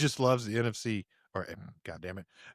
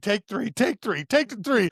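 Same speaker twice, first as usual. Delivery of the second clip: very high shouting yell; 10 semitones higher than usual. Retelling yelling at the TV during a football game: retelling yelling at the TV. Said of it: "I was yelling at the T V".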